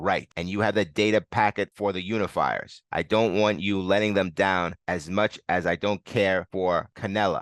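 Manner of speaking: ordinary delivery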